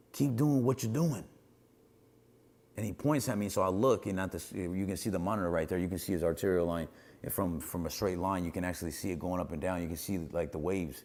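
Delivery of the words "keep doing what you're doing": put-on shouting, pitched high. Retelling what the doctor yelled during CPR: imitating a yell. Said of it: "Doctor Jaffe yells at me".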